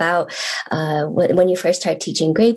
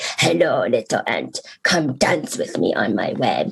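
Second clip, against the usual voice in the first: very low, put-on spider voice; 8 semitones lower, 4 dB quieter than usual. Telling a story, the speaker voices the spider inviting the ant, in a spider voice. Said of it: "use my spider voice and say".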